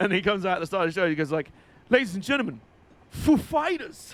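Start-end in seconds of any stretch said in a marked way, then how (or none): 3.4-4.1 announcer-style punch with heavy stress on Fighters. Acting out the band's introduction at the start of the show, as Christopher Walken stressing "Fighters". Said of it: "the emphasis is on fighters".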